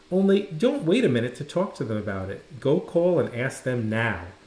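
plain reading voice

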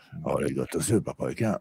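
put-on West Swedish accent. Quoting a man's line in Swedish, Bert Karlsson-style West Swedish dialect. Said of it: "för Bert låter så".

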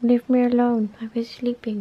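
cat voice, grumpy and put out. Voicing a cat that was just woken up: grumpy cat voice. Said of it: "That's her grumpy face".

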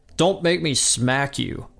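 threatening, menacing tone. Reading a story aloud, one boy raises his fist at another character, threatening. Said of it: "Butthead threatens".

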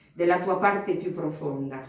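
plain

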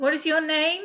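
sugary, honeyed, sweet voice. Liz questions Alicia, asking sweetly. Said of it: "Liz asked sweetly".

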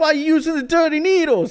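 put-on overdone New York accent. Imitating a tattoo show host: overdone New York accent. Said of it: "overplaying the New York thing".

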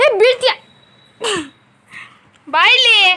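high, loud shout, called out.

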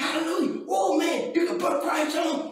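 excited, exultant preaching shout.

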